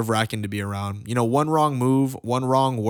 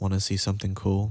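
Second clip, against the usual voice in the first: whisper, pitched lower; 4 semitones lower, 4 dB quieter than usual. Retelling what a classmate said in art class: imitating a whisper. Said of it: "he whispers in my ear".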